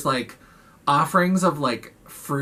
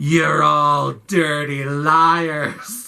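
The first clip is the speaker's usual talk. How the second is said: very slow, intense, drawn-out "liars"; 4 dB louder than usual. Retelling a film scene where a man accuses little girls: imitating an intense accusation. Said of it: "he's, like, so intense".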